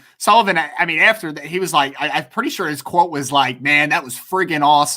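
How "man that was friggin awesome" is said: plain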